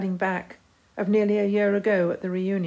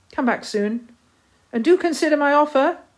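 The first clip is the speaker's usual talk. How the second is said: raised, pitched-up shout; 7 semitones higher, 6 dB louder than usual. Bob calls to Priscilla as her train draws out of the station, shouting. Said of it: "shouted Bob as the train drew out".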